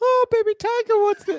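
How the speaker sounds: very high, creepy character voice. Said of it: "he does Baby Tiger's voice".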